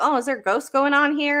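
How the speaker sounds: mocking, high, weird sarcastic tone. Retelling what a man said on his patrol: imitating weird sarcasm. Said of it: "weird sarcasm".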